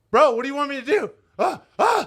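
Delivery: mock frantic, high, panicky freaking-out babble. Speaker retells a story, acting out his own past panic. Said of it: "I'm freaking out".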